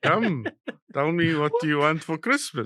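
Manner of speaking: put-on Afrikaans accent. Imitating a scary Father Christmas in an Afrikaans accent. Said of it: "Father Christmas is talking in an Afrikaans accent".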